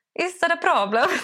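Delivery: put-on Italian accent. Retelling stepping in to help others explain, speaking with an Italian accent. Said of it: "alltså man fick italiensk brytning".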